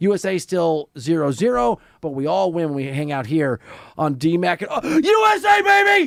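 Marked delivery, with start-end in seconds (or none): 4.7-6.1 elated yell, very high, slow and drawn out. Cheering for the usa on stream after a goal, excited yelling. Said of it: "Sorry to yell at you in your car".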